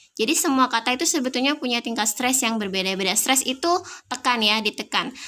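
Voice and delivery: ordinary delivery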